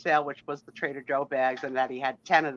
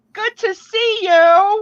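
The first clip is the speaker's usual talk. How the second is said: put-on Texas drawl, very high, very slow, very loud; 13 dB louder than usual. Welcoming everyone, the speaker says the greeting in Janine's voice. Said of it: "I gotta say it in my in my Janine's voice".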